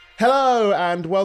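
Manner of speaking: squeaky, very high, loud show-intro voice. Saying hello on a podcast the way you always do, in a very high-pitched greeting. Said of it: "I always do that so freaking high pitched".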